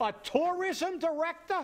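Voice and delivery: high, loud disbelieving scoff.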